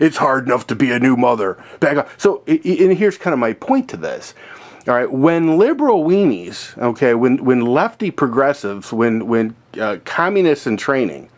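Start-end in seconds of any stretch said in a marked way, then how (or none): 0.0-2.1 put-on, lower-pitched, stern voice. Quoting a talk-show host turning on a mayor: imitating Whoopi Goldberg, lower pitch. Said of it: "drops it down a pitch".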